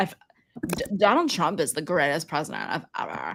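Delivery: put-on full Valley Girl voice, swooping and sing-song. Imitating how he talks: Stephen Miller as a Valley Girl. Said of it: "he is a Valley Girl".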